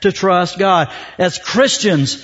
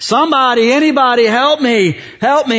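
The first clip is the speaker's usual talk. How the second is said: play-acted, slow, stretched-out yelling and screaming; 4 semitones higher than usual. Telling a joke about a man hanging from a tree, acting out yelling and screaming. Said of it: "he's yelling and screaming".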